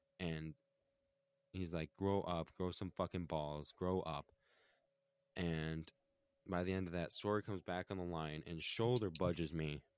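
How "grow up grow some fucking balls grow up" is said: ordinary talk, nothing marked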